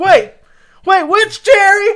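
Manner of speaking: mimicked loud, boisterous voice. Retelling what a coworker said in the bathroom: imitating a loud, boisterous coworker. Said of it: "really loud and boisterous".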